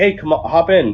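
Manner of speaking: woman's yell, called out and kept light. Speaker retells what a lady in her car yelled, retelling a lady's yell. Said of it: "some lady in her car just yelled like".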